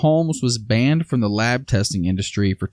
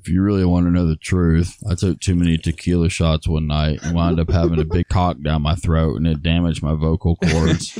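put-on voice dropped very low; 7 semitones lower than usual. Redoing a line after friends suggest using a dude's deep voice, put-on deep voice. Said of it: "Let me do it again".

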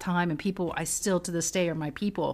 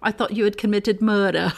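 loud, lovely put-on British accent, lightly amused; 3 semitones higher, 8 dB louder than usual. Retelling what a friend said after a confession: imitating a British accent. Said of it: "She goes".

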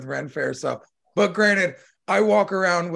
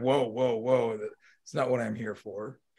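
put-on suddenly serious voice, lower and quieter; 5 semitones lower, 6 dB quieter than usual. Recounting a guy at the Ren Fair who dropped his accent, mimicking a suddenly serious voice. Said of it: "changed his fucking his voice".

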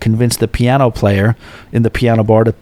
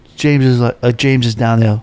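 ordinary talk

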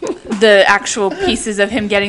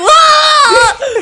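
high, loud mock scream. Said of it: "she's, like, screaming".

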